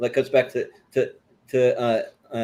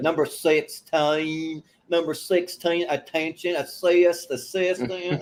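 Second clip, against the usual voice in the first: exaggerated put-on Southern accent, higher pitch; 4 semitones higher than usual. Retelling a sketch character calling out numbers: Jan Hooks's exaggerated Southern accent. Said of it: "really brings up the, the, like, Southern accent".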